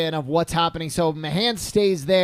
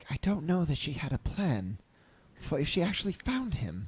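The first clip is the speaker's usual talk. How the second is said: quiet, soft, hushed half-whispered aside; 2 semitones lower, 9 dB quieter than usual. Speaking in character to a companion during the game: half-whispering. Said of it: "And I just whisper".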